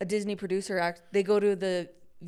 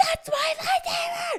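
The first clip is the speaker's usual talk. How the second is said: play-acted shrill scream, very high and loud; 5 dB louder than usual. Retelling a video where a fan sees his lightsaber: imitating someone screaming. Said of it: "He's screaming".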